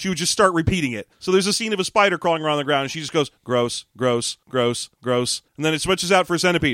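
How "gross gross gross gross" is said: low, flat, toneless, very slow monotone drone. Retelling how a woman reacted to every bug on screen, in a flat monotone. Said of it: "in a flat monotone".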